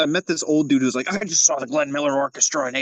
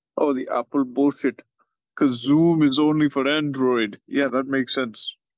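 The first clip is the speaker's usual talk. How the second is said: Indian-accented voice. Complaining that the Zoom chat won't show, a speaker puts on an Indian accent. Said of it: "You can't say Apple bullshit in the Indian accent".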